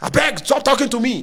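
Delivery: put-on arrogant Nigerian accent, high-pitched. Acting out how he used to talk back in the day, in a mock-arrogant nigerian accent. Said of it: "I talk with a Nigerian accent".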